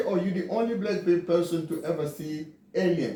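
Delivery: ordinary delivery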